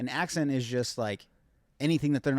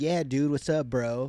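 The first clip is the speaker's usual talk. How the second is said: put-on surfer-bro American accent. Showing how people abroad assume americans talk: stereotyped american dude voice. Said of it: "just assume everyone talks like".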